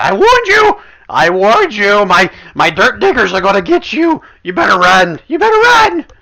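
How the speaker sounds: very high-pitched, very loud, shrill, menacing yell. Voicing an unseen figure who threatens Gubrick: voice of an unseen threatening NPC. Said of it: "you hear that same voice again".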